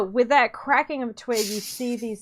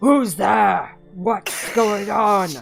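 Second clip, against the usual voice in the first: loud, booming voice; 3 semitones lower, 6 dB louder than usual. Game narrator voices someone who hears the sneaking party: loud booming voice. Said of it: "loud voice, booming voice go".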